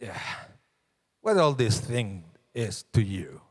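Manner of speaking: wicked, wicked-sounding tone of voice. Showing how the wicked one asks the same question: voice of the wicked questioner. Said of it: "saying it with very different body language and tone".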